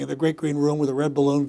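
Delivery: droning, rushed, quick, flat, expressionless monotone read. Showing how they read a children's book aloud: quick flat monotone reading. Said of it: "it's in a monotone ... just going going through it like that".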